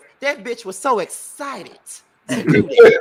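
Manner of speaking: shrill, booming, very high, loud put-on character voice. Putting a remark about someone into Dominique voice. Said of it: "Let me put it in my Dominique voice".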